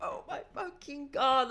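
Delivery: mock ecstatic shriek, very high-pitched, excited. Retelling freaking out and turning to a companion at a show: retelling a scream. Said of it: "I'm screaming at her".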